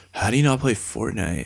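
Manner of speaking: put-on monotone voice. Retelling a chat about games, imitating a friend: monotone Darren impression. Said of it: "'cause he's very monotone".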